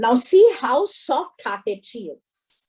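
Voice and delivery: ordinary delivery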